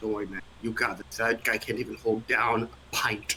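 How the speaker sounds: calm, soft whisper, spoken as a close aside. Voicing a character whispering in another's ear: whispering as Basil. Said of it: "Basil whispers in the other guy's ear".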